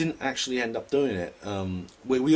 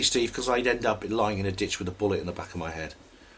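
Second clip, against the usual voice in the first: plain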